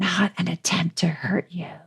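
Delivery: mock whispering. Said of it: "she whispers that last little bit".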